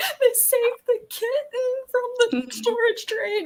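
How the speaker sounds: very high, blubbering, ugly bawling wail. Retelling watching rescue videos, imitating own bawling. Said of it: "I will be there bawling".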